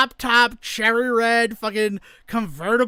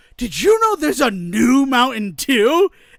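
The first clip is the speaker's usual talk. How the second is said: mock beaming, smug, self-satisfied, delighted tone. Telling a story, the speaker quotes a man strutting in, imitating a very happy man. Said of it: "He's so happy".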